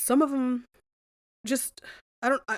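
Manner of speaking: high, halting, stumbling, broken-off stutter. Describing gruesome killings to listeners and losing the words, stuttering. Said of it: "I'm stuttering, I'm stuttering".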